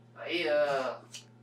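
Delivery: loud, high calling out.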